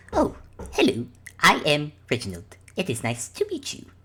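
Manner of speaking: slow, deliberate character voice. Voicing Reginald greeting the players from the ground: Reginald character voice. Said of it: "the Reginald who's still on the ground actually looks over at you guys and goes".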